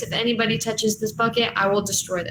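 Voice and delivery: very soothing, gentle, kind voice. A player's character speaks to the group, in a soothing and kind voice. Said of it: "in a very like soothing and kind voice".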